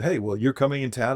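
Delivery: normal talking voice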